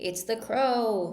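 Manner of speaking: shrill alarmed cry, crow drawn out. Reading a storybook line where a brother cries out, shrill cry of alarm. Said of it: "cried out in a shrill voice of alarm".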